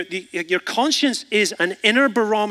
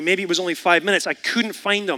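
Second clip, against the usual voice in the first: ordinary talk, nothing marked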